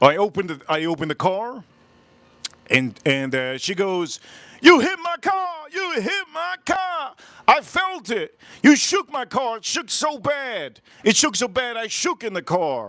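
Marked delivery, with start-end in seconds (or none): 4.6-12.9 mock, very high, repeated screaming. Retelling a driver's accusation of hitting her car: imitating someone screaming. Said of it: "she started screaming".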